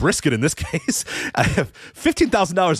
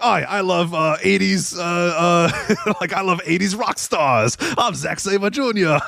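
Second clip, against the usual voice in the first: slow, bad fake English accent drifting Scottish, stretched "uh"; 4 semitones higher than usual. Retelling someone's impression of Zack Sabre Junior, in a terrible Zack Sabre Junior voice. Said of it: "Australian guy trying to be English, but he kind of sounded Scottish".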